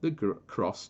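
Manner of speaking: ordinary delivery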